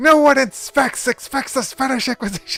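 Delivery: put-on comedic British voice. Revealing a character is secretly British: Monty Python impression. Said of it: "do the Monty Python impression".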